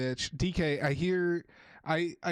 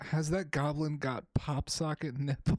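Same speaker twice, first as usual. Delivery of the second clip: ordinary delivery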